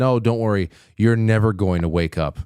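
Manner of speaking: normal talking voice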